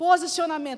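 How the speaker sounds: loud, high, proclaiming each word.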